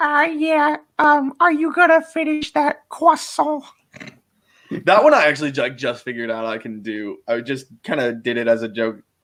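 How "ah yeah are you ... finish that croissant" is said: very high put-on cartoon character voice. Showing an impression of a cartoon character: Carl Wheezer voice. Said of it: "Carl Weezer's just like".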